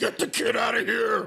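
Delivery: rough creaky high voice. Retelling a wrestler shouting at a fan during his ring walk: imitating a Batman voice. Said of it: "this Batman voice".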